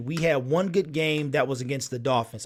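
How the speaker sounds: plain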